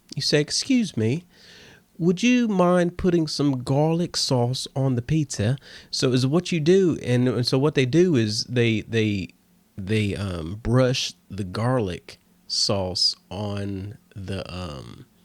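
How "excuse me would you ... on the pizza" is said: nice, polite, well-mannered, proper voice. Showing how to ask them for garlic sauce: proper polite voice. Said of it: "ask them nicely in your proper voice".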